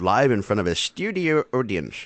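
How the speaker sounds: bad attempt at a put-on Irish accent. Opening the recording, the host speaks in a put-on irish accent. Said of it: "That was my Irish accent".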